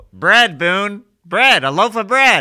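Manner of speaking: loud high-pitched yelling. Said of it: "Tony would always yell".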